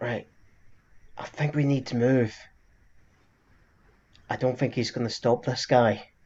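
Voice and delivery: hushed, half-whispery stage whisper. In a game scene, a character urges the group to move, Welsh half-whispering. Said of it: "you just hear Welsh kind of whispering".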